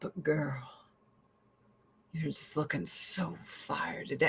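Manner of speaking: very quiet whisper dropped an octave, sweet coaxing tone. Speaker imitates her husband talking her into things, imitating husband's dropped-octave voice. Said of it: "he drops it a couple of octaves".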